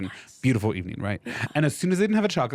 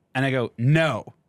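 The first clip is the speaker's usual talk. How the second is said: usual speaking voice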